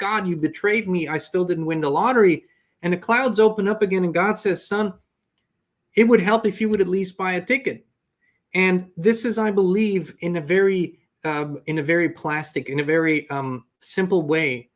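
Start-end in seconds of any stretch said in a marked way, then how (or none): none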